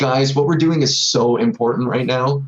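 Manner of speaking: ordinary delivery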